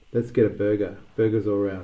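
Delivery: ordinary delivery, nothing marked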